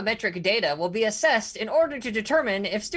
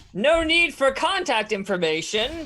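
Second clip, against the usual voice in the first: grand, lordly, proclaiming voice; 4 semitones higher than usual. Narrating a scene, a voice answers from the top of the hill: booming voice. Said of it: "you hear a booming voice that says".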